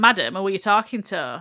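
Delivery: ordinary delivery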